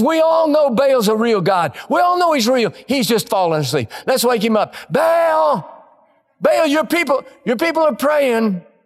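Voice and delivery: put-on, high, jeering, sneering ridicule. Retelling a prophet taunting the worshippers of baal, retelling a mocking taunt. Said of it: "He mocks them".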